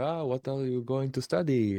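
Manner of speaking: put-on Israeli accent. Retelling a family friend's question, mimicking the friend's heavy Israeli accent. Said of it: "his like heavy Israeli accent".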